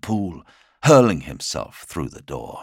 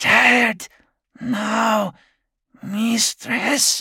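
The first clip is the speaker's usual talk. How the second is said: feeble and faint voice, pitched very high. Narrator reads a trembling man speaking to his mistress; weak, faint voice. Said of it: "His voice was as weak as hers".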